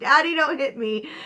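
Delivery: high, loud hollering yell. Retelling how someone ran down the hallway: imitating someone yelling. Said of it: "running down the friggin' hallway yelling".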